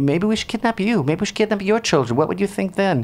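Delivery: facetious mock menace.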